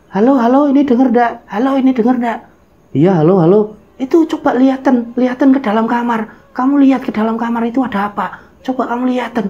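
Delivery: put-on very high-pitched little old granny voice. Retelling a phone call, the caller speaks to the boy in an old granny voice. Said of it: "ada suara seperti nenek-nenek".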